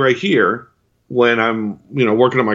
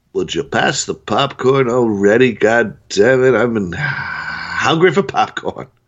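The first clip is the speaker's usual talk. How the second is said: put-on voice of a very old grandpa. Podcast host opens the show demanding popcorn, in an old man voice. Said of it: "You sound like you're like 89 years old".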